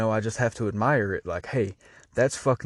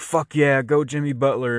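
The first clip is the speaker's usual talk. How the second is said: excited, screaming, cheering yell; 4 semitones higher, 4 dB louder than usual. Speaker recalling cheering for Jimmy Butler in the crowd, retelling own screaming. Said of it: "I'm sitting there screaming like".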